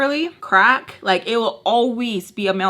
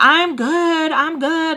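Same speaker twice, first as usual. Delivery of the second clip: mock very slow, loud, high, brash, obnoxious, drawn-out; 7 semitones higher than usual. Retelling a reply to someone who tried to get close: imitating being loud and obnoxious. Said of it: "all loud and obnoxious".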